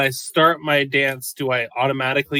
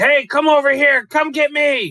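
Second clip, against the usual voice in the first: very high, loud shout; 13 semitones higher, 6 dB louder than usual. A player's character waves his swords to distract the bugs, yelling.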